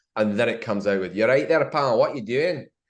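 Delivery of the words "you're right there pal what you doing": put-on Scottish accent, pitched up. Retelling playing the Sheriff of Nottingham as a child: Scottish-accent Sheriff of Nottingham. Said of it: "do it in a Scottish accent".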